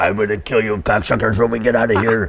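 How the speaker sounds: put-on, fake French accent. Retelling the threat of a strapped-down man: put-on french accent. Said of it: "with a French accent".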